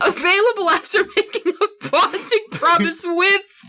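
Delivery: high-pitched, giggling, voice breaking up with laughter.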